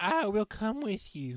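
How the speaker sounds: put-on Southern accent, very high pitched. Voicing Bobby Sue answering the mentor's summons, Bobby Sue's Southern voice.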